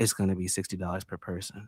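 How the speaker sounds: very quiet, hushed whisper close to the ear. Retelling what a woman said after leaning to his ear: imitating a whisper. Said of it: "Why she why she do it in a whisper though?".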